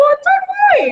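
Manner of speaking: mock yelling, high and loud.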